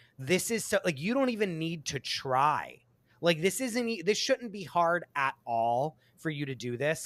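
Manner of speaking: normal talking voice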